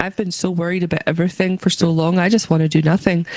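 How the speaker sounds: ordinary talk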